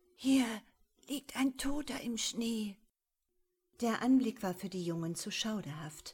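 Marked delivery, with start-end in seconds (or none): 0.2-2.8 breathed almost inaudibly, breathy, higher pitch. Narrator reads a boy speaking to another boy, breathed almost inaudibly. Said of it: "hauchte Paul beinahe unhörbar".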